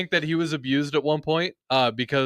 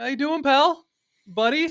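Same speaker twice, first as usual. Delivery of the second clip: mock pet-talk voice, pitched higher; 13 semitones higher than usual. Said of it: "Why are you talking to him like that?".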